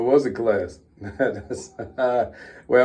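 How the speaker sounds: slow speech broken up by laughter. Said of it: "I'm laughing 'cause what somebody else said".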